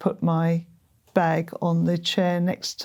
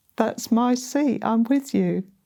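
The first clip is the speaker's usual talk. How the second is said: put-on loud voice, higher pitch; 5 semitones higher than usual. Recounting what a voice said to them, retelling a loud voice. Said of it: "saying to me loudly".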